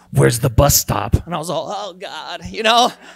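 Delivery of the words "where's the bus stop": very low, loud, raspy, croaking voice. Speaker retells a stranger suddenly speaking to them: croaky, raspy voice. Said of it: "kind of like croaky, raspy kind of voice just go".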